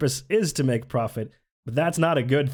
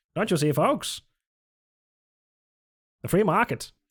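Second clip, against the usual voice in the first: put-on old-time fifties salesman voice, sales-pitch patter; 4 semitones higher than usual. Addressing the folks, the speaker puts on a fifties salesman voice. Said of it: "Like a fifties salesman voice".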